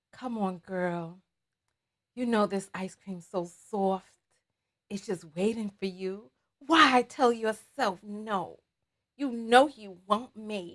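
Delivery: very quiet, low, hushed, sultry, seductive murmur. Describing the kind of voice she has, demonstrating a sensual voice. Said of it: "mine is such a sensual voice".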